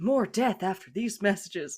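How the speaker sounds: broadcast announcer delivery. Explaining how they start to sound, slipping into an announcer voice. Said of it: "I start to sound like an announcer".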